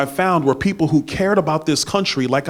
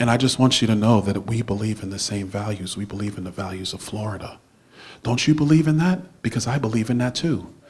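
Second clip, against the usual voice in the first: soft-spoken, gentle, quiet, sweetly kind; 7 semitones lower, 5 dB quieter than usual. Imitating the speech a rival will give across the state: imitating David Jolly's soft-spoken speech. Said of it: "let me do it right".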